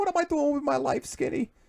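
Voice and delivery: put-on heavy Boston accent. Retelling what a woman says if she passes: thick Boston accent. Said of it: "she's got like this real thick Boston accent".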